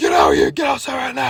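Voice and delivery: loud, freaked-out shout, pitch jumping up high. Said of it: "He's, like, freaking out".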